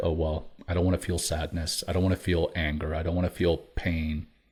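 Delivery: ordinary delivery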